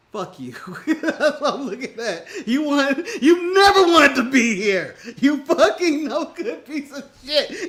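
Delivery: mock furious cursing rant. Imagining what the wrestling boss would say, imitating Tony Khan angrily. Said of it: "this is Tony saying".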